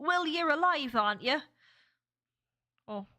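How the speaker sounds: regional UK accent, local dialect. Showing how people in the speaker's part of the uk talk, in a regional uk accent. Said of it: "people literally talk like this".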